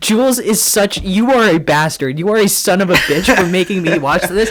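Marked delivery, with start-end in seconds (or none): none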